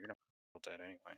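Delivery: pouting, sulky muttering under the breath.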